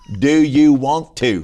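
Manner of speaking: put-on slow, loud North Carolina Southern accent. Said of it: "Like that".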